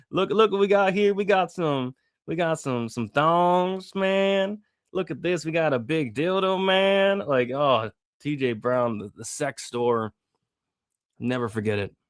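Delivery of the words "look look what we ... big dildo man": put-on country accent, pitched up high. Recalling a moment in MMA history at a sex shop: TJ Brown country accent. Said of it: "with that country accent".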